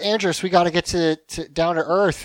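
plain

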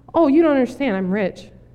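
mock-calm tone of a man. Telling a story about two stranded guys, imitating the calm one. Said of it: "the other guy is like really calm".

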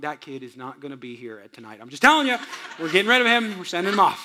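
muttering under the breath. Retelling what was muttered about a misbehaving kid, under the breath. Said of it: "under my breath".

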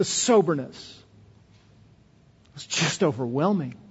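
voice choked with tears. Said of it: "You can hear that in my voice now".

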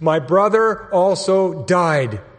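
loud, tearful, sobbing screaming outburst. Retelling how a girl burst into tears in front of the principal, imitating a crying scream. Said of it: "She bursts into tears and she screams".

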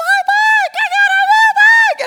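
piercing, very high, loud, delighted, excited squeal. Retelling seeing a new bike at age ten, imitating his young self's high voice. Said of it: "my voice is like 16 octaves higher".

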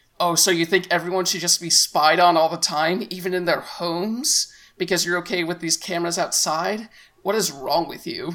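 ordinary talk

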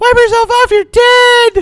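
very high, loud, weird squeaky voice.

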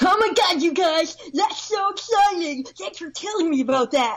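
high animated cartoon character voice. Asked during a mock audition to do a cartoon person voice; cartoon person voice. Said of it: "Can you do a cartoon person voice for me?".

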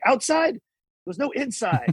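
acted-out male yell. Retelling a border officer arguing with a woman at customs, retelling a yell. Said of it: "The guy's like yelling".

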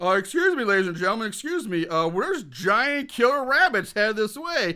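play-acted official announcer voice, as through megaphone. Retelling how the cops make an announcement: imitating a bullhorn announcement. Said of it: "get on a bullhorn like".

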